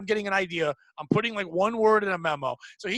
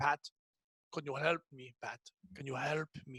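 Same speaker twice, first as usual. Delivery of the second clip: put-on hard, heavy Eastern European accent; 6 semitones lower, 12 dB quieter than usual. Retelling a coworker asking for help: imitating a coworker's Eastern European accent. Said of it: "that, like, Dracula accent".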